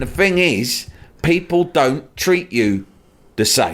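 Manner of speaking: mock loud Cockney male voice. Retelling what a loud man on a plane said: loud cockney accent. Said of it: "talking in a very loud Cockney accent".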